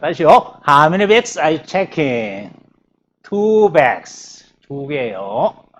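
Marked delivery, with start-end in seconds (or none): 0.7-2.5 pitch climbs then drops on "checking". Teacher drilling intonation of a question with a question word: rise-fall on 'checking'. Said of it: "꼬랑대기가 올라갔다가 내려갑니다".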